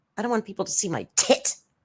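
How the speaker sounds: scornful, mocking, crude delivery. Mocking how Amber talked, calling her vulgar: mocking imitation of Amber. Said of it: "she's just so vulgar".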